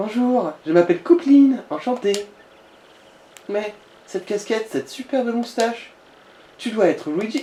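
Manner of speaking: high-pitched girlish put-on voice. Voicing a game character after being asked: girl voice. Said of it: "fais une voix de fille".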